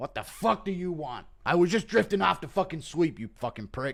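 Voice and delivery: high, annoyed rant. Jones has something on his mind; Dana turns over and answers, in an impression of Dana. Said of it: "Impression of Dana getting Jones's call".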